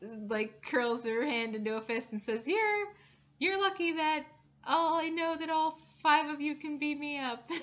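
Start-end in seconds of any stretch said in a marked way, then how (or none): 2.5-7.5 high, upset, sore, stumbling spider-monster voice. Voicing an upset spider monster who curls her hand into a fist: upset spider monster voice. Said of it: "she looks very, very upset".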